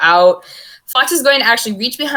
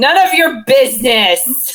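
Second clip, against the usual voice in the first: calling out at raised pitch; 5 semitones higher than usual. A player voices their character helping Ducky to their feet, shouting. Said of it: "they're gonna shout".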